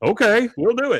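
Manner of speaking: high, loud, fired-up, pumped-up yes. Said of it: "And he was like".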